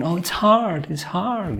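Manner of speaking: mock tearful, very high sobbing voice. Retelling what one of the boys said: imitating a crying voice. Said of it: "this crying voice saying".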